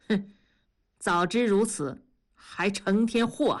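plain

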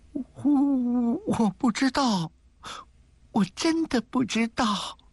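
trembling, quavering voice, pitched very high. Narrator reading a girl's reply in a story, trembling voice. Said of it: "她颤声着说".

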